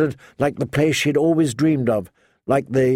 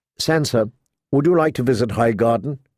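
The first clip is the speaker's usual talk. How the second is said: usual speaking voice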